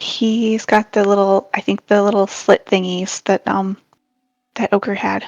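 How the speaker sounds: hushed stage half-whisper, in character. Voicing a character warning the group about a goblin: half-whispering in character. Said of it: "she whispers".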